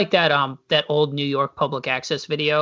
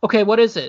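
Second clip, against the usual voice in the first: mock, higher-pitched, very relieved tone; 6 semitones higher, 4 dB louder than usual. Retelling a prank call show, imitating the caller's target: imitating a relieved reply. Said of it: "the guy sounds so relieved".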